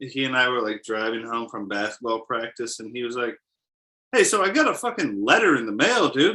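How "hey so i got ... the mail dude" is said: pushy, confrontational, aggressive, high-pitched tone. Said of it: "The tone of voice sounds pretty aggressive".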